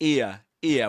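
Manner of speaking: ear said with received pronunciation diphthong. Showing learners traditional British pronunciation: RP diphthong in ear. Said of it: "with the diphthong".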